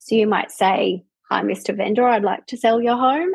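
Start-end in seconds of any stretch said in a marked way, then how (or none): 1.3-3.3 rising question lift on Hi, Vendor and home. Showing how an eighteen-year-old greets a vendor: rising at each phrase end. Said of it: "everything goes up".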